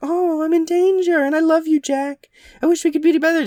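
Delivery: very high, timid, meek princess voice. Retelling a film's princess before she turns evil: imitating a meek princess. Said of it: "this meek-mannered princess who's like".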